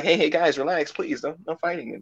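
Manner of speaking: placating, soothing, pleading peacemaker tone. Acting out Tony stepping in to stop a fight: Tony impression. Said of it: "And then Tony just getting in like".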